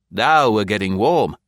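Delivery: ordinary delivery, nothing marked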